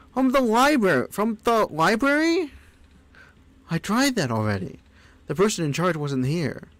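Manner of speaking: high, squeaky, exasperated put-on character voice. Speaker demonstrates a character's first line: frustrated squeaky character voice. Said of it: "I first did the voice when uh, they were frustrated".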